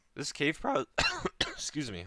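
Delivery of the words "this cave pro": high voice breaking in the middle of a word. Explaining a game strategy mid-sentence, voice cracking. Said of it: "my voice cracked".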